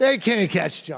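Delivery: loud cheering yell, shouted right out. Retelling how a father in a cinema audience yelled out loud: imitating father yelling. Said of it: "yelled right out loud".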